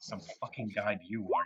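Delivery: muttering under breath. A player voices their character after limping down the stairs, muttered under breath. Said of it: "like under my breath".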